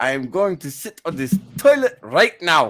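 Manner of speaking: clumsy, awful put-on German accent. Joking about sitting on a toilet: awful German accent. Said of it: "my German accent is awful".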